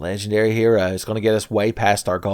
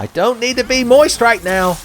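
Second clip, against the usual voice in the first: put-on very high-pitched hot-girl voice; 7 dB louder than usual. The speaker does a bit as an impression of a hot lady in college class. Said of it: "It's my impression of a hot lady".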